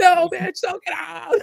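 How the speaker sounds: mock very high, shrill, drawn-out, rough scream. Imitating a theater-goer at a horror movie: imitating someone screaming. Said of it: "somebody in the theater screaming at the screen".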